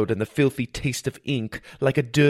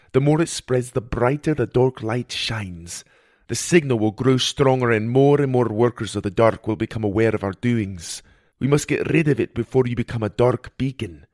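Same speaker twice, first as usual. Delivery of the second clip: plain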